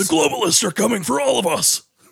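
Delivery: put-on ranting conspiracy-theorist voice. Joking about conspiracy talk, doing an Alex Jones impression. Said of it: "pretty good fucking Alex Jones impression".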